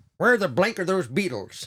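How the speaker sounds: high, thoroughly upset, irritated tone. Retelling a joke with a bleeped swear, upset Ed Sullivan impression. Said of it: "my impression of an upset Ed Sullivan".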